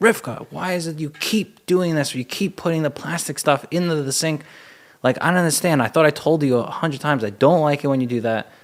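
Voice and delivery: upset yelling. Showing the old way of reacting to plastic forks in the sink: acting out yelling at a partner. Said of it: "by raising my voice, yelling and saying".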